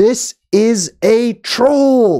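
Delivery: very slow, high, drawn-out shout, spelled out letter by letter. Retelling a story, acting out the dad yelling at his daughter, retelling the dad's yell. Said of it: "So the dad yells".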